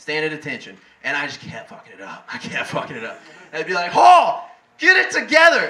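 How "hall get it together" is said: very high, drawn-out drill-instructor yell. Retelling being taught to stand at attention as an instructor shouts: retelling a yell. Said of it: "Kept yelling at me".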